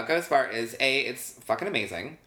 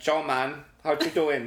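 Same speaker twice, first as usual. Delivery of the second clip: put-on Latin accent; 3 semitones higher than usual. Imitating how Frankie talks when drunk: Frankie's drunk Latin accent. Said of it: "he gets real Latin".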